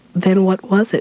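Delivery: pitch climbing upward. A woman presses her husband again when nobody answers about the baby; voice rising. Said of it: "her voice rising".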